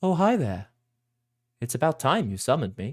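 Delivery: small magical little dragon creature voice. Voicing a small silvery dragon that has just been summoned: voicing a small dragon. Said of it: "small silvery dragon ... looks up and goes".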